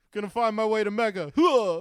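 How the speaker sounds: high-pitched yell with the huh hit hard. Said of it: "that's my [name] impression".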